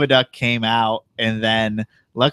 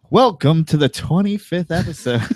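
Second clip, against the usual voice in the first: show-opening announcer delivery, pitched up; 7 semitones higher than usual. Asked to do it again, the speaker repeats the episode intro in announcer voice. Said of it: "Put do it again".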